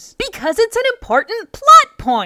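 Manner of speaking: very loud, very high, shrill, emphatic insistent shout. Answering a question about a movie scene, loud emphatic voice. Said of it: "Why are you being so loud?".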